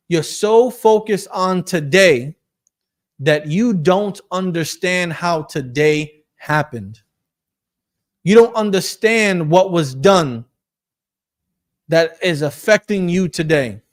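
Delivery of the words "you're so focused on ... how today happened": slow, drawn out, deliberately spelled out word by word. Speaker repeats the point for the women listening, saying it slowly. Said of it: "let me say that a little bit slowly".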